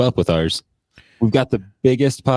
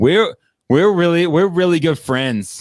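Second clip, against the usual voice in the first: put-on high, kid-like voice like a little kid; 8 semitones higher, 3 dB louder than usual. Describing how a kid would talk about it, imitating a kid talking. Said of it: "the way that a kid would talk".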